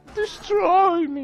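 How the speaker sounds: strange, shrill, very high, very loud odd voice. Repeating an odd voice just heard in the game: imitating a strange game voice. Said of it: "what was that voice about?".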